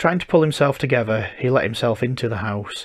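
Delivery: ordinary delivery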